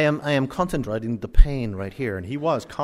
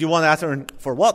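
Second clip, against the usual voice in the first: put-on Indian accent that doesn't quite land; 3 semitones higher than usual. Speaker quoting a man at a gas station, in an Indian accent. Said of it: "That's my Indian accent".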